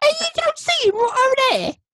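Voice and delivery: put-on cockney accent. Imagining a little knight's voice in the film, the speaker does a cockney accent. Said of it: "They're all like cockney".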